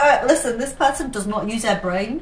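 ordinary talk, nothing marked

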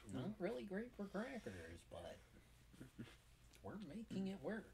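very high, swooping nerdy reviewer voice.

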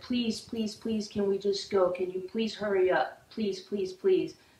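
acted crying, tearful pleading voice. Retelling how she begged him to hurry and leave, retelling a tearful plea. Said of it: "and I started crying".

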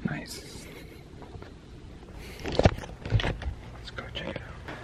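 soft, quiet whisper.

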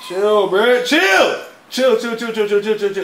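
high, loud, panicked yelling.

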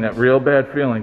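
ordinary talk, nothing marked

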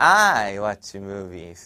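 strong, heavy emphasis on the word I. English lesson on how speakers say i watch movies: strong stress on i. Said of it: "그 말하시는 분들이 I의 강조를 많이 해요. I watch movies 이렇게".

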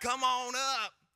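very high, loud, put-on Southern accent. Retelling the pastor calling him up to the front: imitating a Southern accent. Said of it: "He's very Southern".

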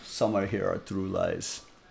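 very soft put-on Russian-sounding accent. Quote a man who has heard both sides of a domestic argument, in a Russian-sounding voice. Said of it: "That's like a Russian voice".

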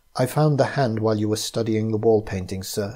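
plain

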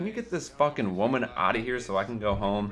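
ordinary talk, nothing marked

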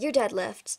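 plain

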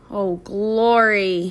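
groaned, groaning through the words. Told that others may be looking for them, the speaker says this with a groan. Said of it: "I said with a groan".

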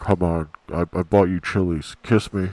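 put-on deepest, low voice, pleading tone. Retelling a friend begging for a kiss: imitating a very deep, loud voice. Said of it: "the deepest voice".

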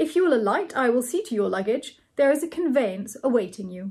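plain reading voice

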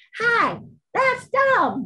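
put-on tiny, very high-pitched little child's voice. Retelling a video where a cat talks: little kid's voice. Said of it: "it has a little kid's voice".

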